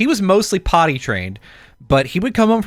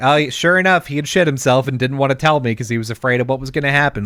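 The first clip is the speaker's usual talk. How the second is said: plain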